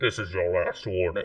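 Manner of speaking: muffled character voice, as if masked. Game player showing the game master their character's voice, Bane-like masked voice. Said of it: "like it's behind a mask".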